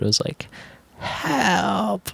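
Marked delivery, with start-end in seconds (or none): 1.0-2.1 put-on soft, quiet cries, higher pitched. Retelling a stranger softly calling for help: imitating soft calls for help. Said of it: "started off very s-, like, soft".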